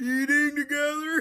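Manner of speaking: put-on tearful crying, high, sobbing voice. Retelling a college basketball player's answer on what he'll miss: imitating someone crying. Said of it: "And he starts crying".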